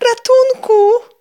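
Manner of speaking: terrified shriek, very high, piercing and loud. Reading a story, a boy jumps to his feet as the meadow sways, screamed. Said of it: "Wrzasnął Adaś".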